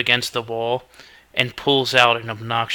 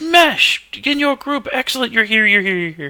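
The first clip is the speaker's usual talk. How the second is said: very high, shrill, swooping yell; 11 semitones higher than usual. Game narrator voices the head of PR calling down the stairs, yelling down the stairs. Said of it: "He yells".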